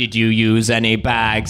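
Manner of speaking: monotone, flat, slow automated robot voice. Mimicking a supermarket's automated self-checkout machine, Sainsbury's self-checkout robot voice. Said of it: "it's all like robot voice".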